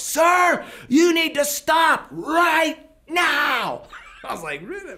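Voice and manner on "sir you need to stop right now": very high, drawn-out yell at top of lungs. Recounting a woman who yelled at you, retelling her yell at full volume. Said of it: "she literally yelled at the top of her lungs".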